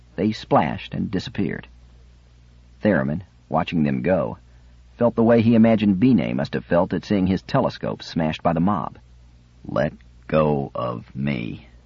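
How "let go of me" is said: low, very slow, struggling mutter. Narrator reads a man struggling against being held down, muttering while struggling. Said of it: "Theremin muttered".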